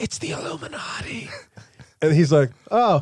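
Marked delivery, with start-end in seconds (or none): 0.0-1.3 very hushed stage whisper, audible from feet away. Retelling what a woman said to a man, in a stage whisper. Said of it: "But she's stage whispering".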